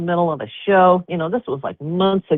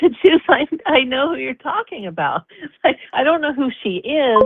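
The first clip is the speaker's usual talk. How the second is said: mock high-pitched screaming, excited and worked up; 8 semitones higher than usual. Retelling own reaction to hearing a name: retelling own screaming. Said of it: "I was screaming at my phone".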